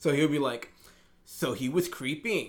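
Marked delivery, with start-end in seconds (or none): 1.3-2.5 statement tune lilting upward like a question on "creeping". Speaker imitates how a man talks, mimicking questioning intonation. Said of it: "always sounds like he's kind of asking a question".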